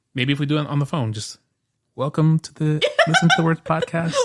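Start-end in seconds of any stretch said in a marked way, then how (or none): 1.9-4.1 mock ASMR-style voice. Joking about recording close to the phone: mock ASMR voice. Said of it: "'Cause I'm holding my phone close to my mouth".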